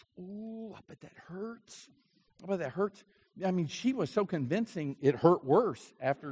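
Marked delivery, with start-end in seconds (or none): 0.2-1.9 very hushed, sympathetic sucking of air through teeth. Retelling how the speaker's mother reacted to a sand spur, imitating her sucking air through teeth. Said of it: "go into this sucking wind through her teeth mode".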